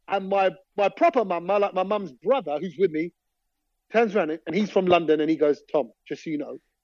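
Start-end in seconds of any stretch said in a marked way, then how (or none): 5.7-6.5 soft, hushed, half-whispered stage whisper. Retelling what the mum's brother said in the car: imitating a half-whisper. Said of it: "he whispers it in my ear".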